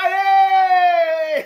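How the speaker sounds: loud, high crowd shouting. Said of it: "All of you will shout".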